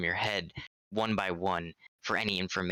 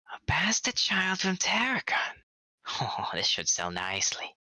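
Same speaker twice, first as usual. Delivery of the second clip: squeaky, very high, swooping gremlin creature voice; 12 semitones higher than usual. Narrating to a player as their creature smiles and speaks: gremlin voice. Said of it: "a gremlin voice come out saying".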